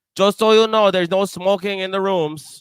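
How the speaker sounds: clumsy, bad fake Jamaican accent, shrill, very high. Retelling what someone told the group, in a bad Jamaican accent. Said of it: "That's a bad Jamaican accent".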